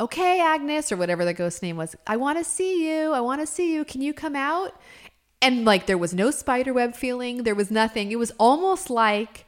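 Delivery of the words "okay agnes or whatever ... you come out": put-on high, rising call-out yell. Retelling how a stepmom called out to a ghost: imitating stepmom yelling. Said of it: "she starts yelling".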